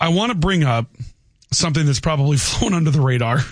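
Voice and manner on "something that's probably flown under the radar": talking while breaking into laughs mid-sentence. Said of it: "I can't even say it without laughing".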